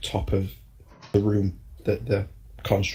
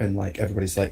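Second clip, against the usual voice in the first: plain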